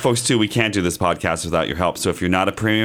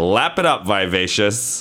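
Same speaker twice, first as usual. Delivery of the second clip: ordinary talk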